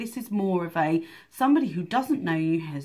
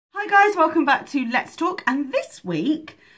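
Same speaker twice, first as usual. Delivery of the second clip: really high-pitched, loud, bright voice, way up; 10 semitones higher, 6 dB louder than usual. Host opening her Let's Talk episode, greeting viewers: really high-pitched voice. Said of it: "she says with a really high pitched voice".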